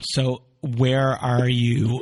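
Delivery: breaking, cracking voice. Reaching out and asking the listener where they stand: voice cracking. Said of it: "My voice cracked there".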